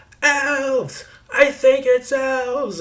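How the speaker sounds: shrill, high, very loud, drawn-out screaming cry. Narrating a quiet man atop a wagon crying out about elves, Telek shouting loudly. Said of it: "in an unusually loud voice".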